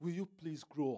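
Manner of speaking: kindly, polite, courteous tone. Putting the question another way as a request, polite. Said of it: "you can see that I said it politely".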